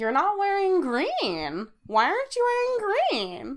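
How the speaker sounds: shrill, very high, swooping, over-the-top delivery. Retelling what they asked a customer on Saint Patrick's Day: exaggerated retelling of own words. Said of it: "Did you say it like that?".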